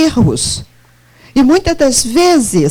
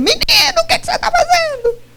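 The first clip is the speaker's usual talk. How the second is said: very high, fast, scolding yell. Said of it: "mas eu grito com ele".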